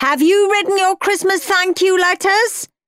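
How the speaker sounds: high, loud shouting. A mother calls from the kitchen to her son watching TV; shouted. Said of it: "shouted Mum".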